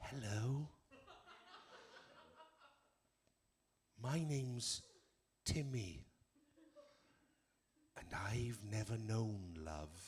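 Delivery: very hushed, slow, swooping little puppy voice. Retelling a charity advert where a puppy talks: voicing a tiny puppy from an advert. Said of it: "this tiny little puppy. And he looked up at me".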